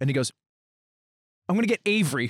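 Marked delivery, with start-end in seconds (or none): 1.5-2.3 put-on earnest threatening tone, higher. Retelling a threat made after a game, imitating a fully earnest threat. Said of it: "he said it with full earnesty".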